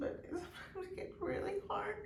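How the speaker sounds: high, tearful crying. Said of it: "I'm so sorry I'm crying".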